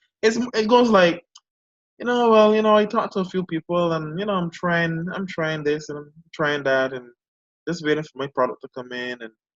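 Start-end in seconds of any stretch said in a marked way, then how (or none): 2.3-9.2 put-on flat, unexcited, sparkless monotone droning. Describing people you talk to, imitating their flat, unexcited voice. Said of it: "I can hear there's there's there's no excitement".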